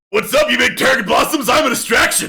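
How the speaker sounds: very high, booming, hollered bellow. Narrating a game scene as combat begins, Arbor bellowing at the group. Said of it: "you hear Arbor bellowing".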